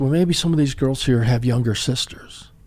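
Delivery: put-on posh, classy British accent. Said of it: "she's got this classy British accent".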